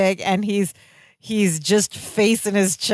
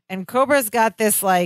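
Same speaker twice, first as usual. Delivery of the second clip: ordinary talk, nothing marked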